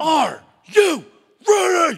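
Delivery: very loud, shrill, in-your-face scream. Retelling how someone screamed a question in their face: imitating someone screaming. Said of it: "And he screamed in my face".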